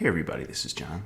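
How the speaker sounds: soft, gravelly, presenter-style radio voice. Showing what a chess channel host's lovely radio voice is like, gravelly John Bartholomew impression. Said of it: "that kind of gravelly bit on it".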